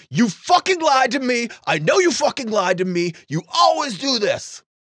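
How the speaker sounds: mock very high-pitched, raging, furious scream. Retelling a man screaming at someone on the phone: imitating someone screaming in anger. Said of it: "begins to scream at the person".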